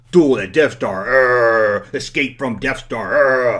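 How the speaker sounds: bad slow monster voice, grunting a drawn-out urgh. Reading old toy box titles aloud, doing a bad Frankenstein impression. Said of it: "bad Frankenstein impression".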